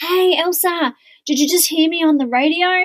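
put-on excited far-carrying yell, high and eager. Retelling an apprentice calling out down the street: imitating someone yelling out. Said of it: "she yells out".

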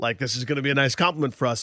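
plain

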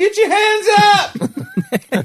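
put-on drunken scream. Retelling a fan heard on a football broadcast: imitating a drunk guy screaming. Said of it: "some drunk guy screaming".

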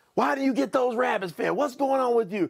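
high-pitched scolding rant outburst. Retelling coming home to dad and stepmother screaming at them: imitating parents screaming. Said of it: "they're screaming at me about these rabbits".

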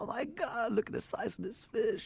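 weepy, tearful outburst through crying. Retelling a fishing trip, quoting someone about a big fish: imitating someone crying. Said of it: "Angela was, like, crying".

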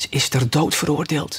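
secretive whisper, close to the ear. The rabbit glances over his shoulder and leans to a girl's ear, whispered.

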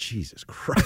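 mock mumbling under breath. Retelling how someone reacted to a question, mimicking a mumble under breath. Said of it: "Bill mumbles under his breath".

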